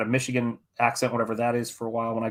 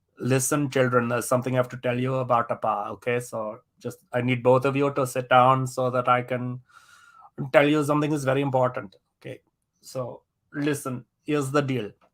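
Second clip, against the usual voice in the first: solid put-on Indian accent held throughout. A father acts out talking to his children at eighteen: indian accent. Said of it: "I do such a solid Indian accent".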